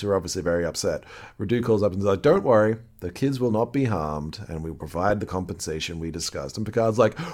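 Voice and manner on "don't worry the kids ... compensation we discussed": usual speaking voice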